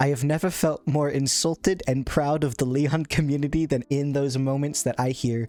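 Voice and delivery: plain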